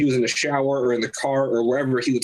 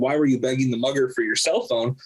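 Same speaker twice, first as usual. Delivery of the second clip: usual speaking voice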